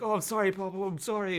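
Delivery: very high, cowering, begging tone, pitched way up. Retelling a film scene where the son apologizes to his father: imitating Jonathan Rhys Meyers cowering. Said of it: "sort of cowering".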